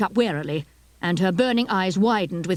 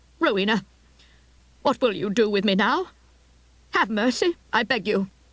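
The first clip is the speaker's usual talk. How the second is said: put-on timid, small, frightened old voice; 2 semitones higher than usual. Narrating a story, voicing the old lady asking Rowena, in a small, frightened voice. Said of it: "in a small, frightened voice asked".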